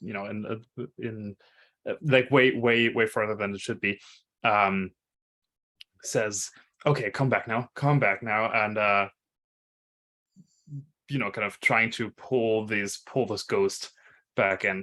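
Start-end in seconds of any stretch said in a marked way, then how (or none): 6.9-8.5 loud carrying whisper. Voicing a character calling a ghost back: carrying whisper. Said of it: "says in this, like, this, like, whisper that is still, like, audible".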